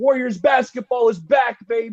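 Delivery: acted, high, jubilant, fired-up cheering yell. Retelling getting out of a chair after a great play: imitating own yell. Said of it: "I'm getting out of my chair and I'm yelling".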